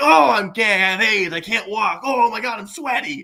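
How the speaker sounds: very high, loud, shrill, mock overacted broad voice. Mocking an actor's overacting in a movie: mocking Dustin Hoffman's overacting. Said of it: "And that's just his whole performance".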